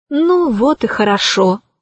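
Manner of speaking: plain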